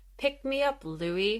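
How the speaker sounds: mock emotionless, matter-of-fact delivery. Retelling a scene where she speaks to Louis amid the blood, monotone. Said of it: "she just says in the monotone voice".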